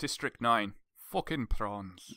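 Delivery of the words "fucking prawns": put-on South African accent. Talking prawns with another speaker, doing a District 9 South African accent. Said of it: "I can't do South African accent though".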